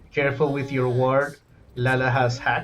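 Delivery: ordinary talk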